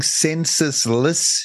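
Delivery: slow, drawn-out word. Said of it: "You gotta say that slowly".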